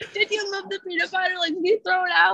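put-on, very high, rushed and panicky freaking out. Retelling asking mom about the moved peanut butter: retelling freaking out. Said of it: "freaking out".

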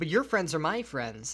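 plain

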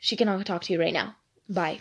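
really rude, dismissive tone. Retelling how he answered a request to talk to his wife: imitating a rude reply. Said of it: "this is how he was".

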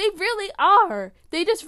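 very high voice breaking up, cracking. Raving about the Marvel shows being watched, voice cracking. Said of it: "My voice cracked".

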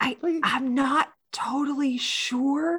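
put-on stage whisper. Retelling what Max said about Grayson: imitating Max's stage whisper. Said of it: "in like a stage whisper is like".

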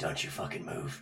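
whispered under breath. Holding a gun to a cookie jar, the speaker warns it, whispered under breath. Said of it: "Under my breath, I whisper".

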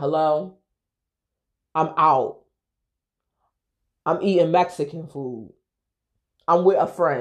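very dry, irked, put-out tone. Speaker retelling Keith answering a call from Sandra, imitating Keith's dry tone. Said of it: "He's real dry".

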